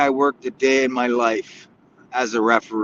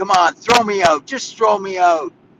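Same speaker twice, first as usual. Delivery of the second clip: imitated scream, pitched higher; 7 semitones higher than usual. Retelling how an angry coach dared him to throw him out: imitating someone screaming. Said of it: "screaming at me".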